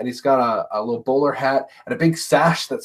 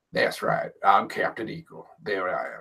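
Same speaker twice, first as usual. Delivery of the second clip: put-on hushed old Southern cowboy voice; 6 semitones lower, 8 dB quieter than usual. Showing how Captain Eagle speaks, in a Captain Eagle cowboy voice. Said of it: "Captain Eagle talks like a cowboy".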